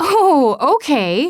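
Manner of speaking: laughing sarcastically. Reading a novel aloud, narrator brushing off a suggestion: sarcastic laugh. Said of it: "I laugh sarcastically".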